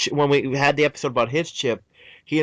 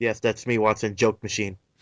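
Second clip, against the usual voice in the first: imitated deadpan, put-on flat voice; 5 semitones lower, 4 dB quieter than usual. Retelling a scene, the speaker quotes Holmes answering Watson in mock deadpan. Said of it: "in his perfect deadpan delivery goes".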